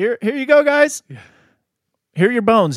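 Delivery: put-on frightened shriek, very high and very loud. Retelling a man calling out into the desert as he leaves bones, imitating a scared yell. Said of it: "but also kind of like a scared yell".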